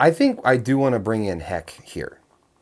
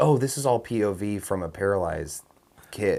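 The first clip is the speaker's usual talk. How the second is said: normal talking voice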